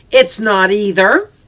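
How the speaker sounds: put-on defiant little girl voice, piping up. Narrator reading the little one contradicting her older sisters, defiant voice. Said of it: "the little one piped up in a defiant voice".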